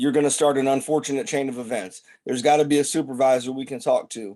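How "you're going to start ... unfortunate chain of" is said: ordinary delivery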